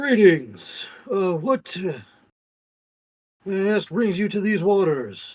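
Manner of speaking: very loud, booming, magnified-sounding voice. Playing a character who magnifies their voice to greet someone, magnified booming voice. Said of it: "my voice is magnified threefold, so it's louder".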